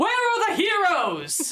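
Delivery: very high, booming, resounding swooping shout. Game master voices a man walking into the middle of a field, booming shout. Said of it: "just booms out".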